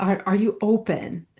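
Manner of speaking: imitated British accent. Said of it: "in his British accent".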